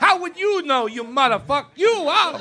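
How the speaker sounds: put-on thick New York Italian accent. Mocking an audience member who heckled: imitating thick new york italian accent. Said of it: "the thick New York Italian accent".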